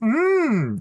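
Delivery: high "mm" moan. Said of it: "약간 이런 소리를 섞어".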